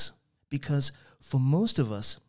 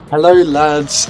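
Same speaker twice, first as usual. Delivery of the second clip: booming, hearty, very loud, "lads" stretched out; 2 semitones higher, 16 dB louder than usual. Reading a story aloud, the housemaster walks in and greets the waiting boys; jovial tone. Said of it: "he said in a jovial tone".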